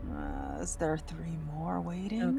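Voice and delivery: muttering under the breath, aside. Speaking in character quietly to the girls beside: muttering under breath. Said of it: "kind of mutter under my breath".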